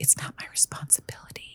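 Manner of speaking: whispered, very quiet and hushed. Stating a point to get people's attention: whispering. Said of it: "I wanna whisper it because it gets people's attention".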